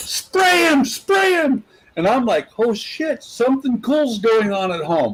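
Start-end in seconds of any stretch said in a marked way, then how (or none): 0.0-1.6 put-on, shrill, very high, top-of-lungs yelled scream. Telling a family story, retelling how mom screamed at the top of her lungs. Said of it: "Mom screams at the top of her lungs".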